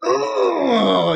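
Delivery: high, mock uncomfortable squirming groan. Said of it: "pulled out my collar and was just like".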